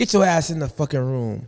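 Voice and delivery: ordinary talk, nothing marked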